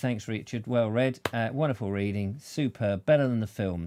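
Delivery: ordinary talk, nothing marked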